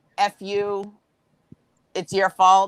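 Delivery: ordinary delivery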